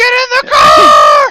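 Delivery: shouting. Voicing a character who shouts to everyone: shouting. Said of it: "You just shout to everyone".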